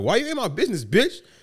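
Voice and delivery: put-on high, heated yell. Retelling a video where a man was yelling: imitating someone yelling.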